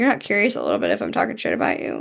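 low, fast, mocking delivery.

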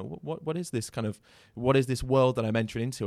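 ordinary talk, nothing marked

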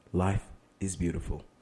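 seductive, sexy delivery. Asked to deliver a car ad line, in a sexy voice. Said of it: "I say it in a very sexy way".

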